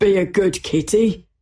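words spoken through laughter. A policeman locking Patience's door, laughing. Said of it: "laughed the policeman".

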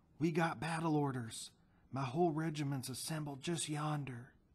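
whispered seriously. Reading a story, a man in full uniform addresses a boy, whispered seriously. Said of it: "he whispered seriously".

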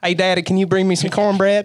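put-on high, toddler-like little girl's country accent. A father imitates his two-year-old daughter calling to him, in a country accent. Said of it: "she even has a country accent when she says it".

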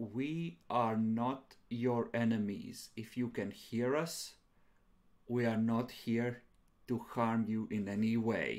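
very slow, careful, deliberate, every word placed. Speaking as his character to whoever may hear, very slow and deliberate. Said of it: "very slowly and deliberately say".

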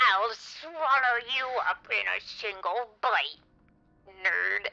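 very high, loud, seething, furious reptile hiss. Narrator reading a fable, the lizard answers the hunter's taunt: furious hissing lizard. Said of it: "the furious lizard hissed".

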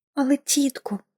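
bewildered, barely audible, hushed half-whisper. Pollyanna answers her aunt after being scolded, half-whispered. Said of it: "прошепотіла вона".

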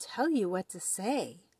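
ordinary delivery

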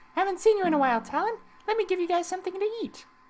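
put-on very high, generic stock girl character voice. Voicing a character who greets Talon and offers food, generic girl voice. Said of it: "I'm starting to get a generic girl voice".

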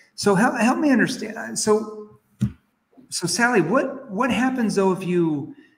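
high, skeptical yet concerned tone. Showing how to ask a client the consequence question: skeptical yet concerned tone. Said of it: "in a skeptical yet you're concerned for them tone".

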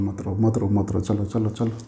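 low, soft, soothing voice.

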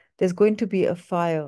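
ordinary talk

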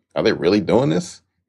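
ordinary delivery

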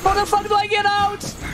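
frantic panicked shouting.

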